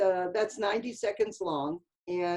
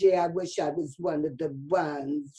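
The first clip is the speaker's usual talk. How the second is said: slow, drawn-out, odd character voice; 4 semitones lower than usual. Retelling working with a hysterical commercial actor, imitating Marvin Kaplan's way of talking. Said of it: "he always talked like that".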